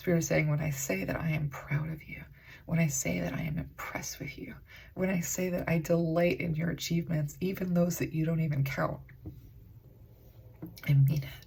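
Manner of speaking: choked-up voice, on the verge of tears. Speaker relaying a spiritual message to the listener, choking up. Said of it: "I'm gonna cry".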